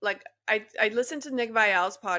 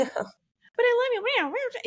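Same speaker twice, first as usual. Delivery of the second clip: very high, slow, squeaky gremlin voice. Describing Nick Viall's version of a woman, doing Nick Viall's gremlin voice. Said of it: "it just sounds like a gremlin".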